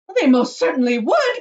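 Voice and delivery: high, very loud, shrill, indignant, offended cry. Mrs. Gloop contradicts Mr. Wonka in the story, indignant. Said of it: "cried Mrs. Gloop indignantly".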